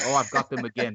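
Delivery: put-on very posh, well-bred upper-class English accent. Acting out a man who closes the door and smokes a pipe, use a very deep-bred english accent. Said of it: "He speaks in a very, very, very um, deep bred English accent".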